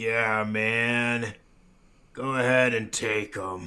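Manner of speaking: deep, drawn-out, stoned hippie man's voice faking menace. Imagining how the orc pirate would sound as a hippie, deep and scary. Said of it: "still being like deep and scary".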